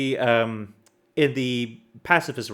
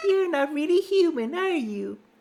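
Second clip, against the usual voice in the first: giddy, very high-pitched voice. Reading Flowey's line aloud; giddy Flowey voice. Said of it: "give him his giddy voice again".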